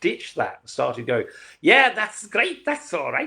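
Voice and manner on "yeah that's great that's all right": put-on Sheffield English accent. Recalling how he dropped his first way of talking, in a put-on Sheffield accent. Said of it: "imitate a Sheffield accent".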